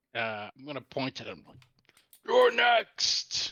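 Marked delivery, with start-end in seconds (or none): 2.3-3.5 roaring, much higher and louder. A player's character points at the enemy rider across a gap, roaring. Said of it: "after roaring this at him".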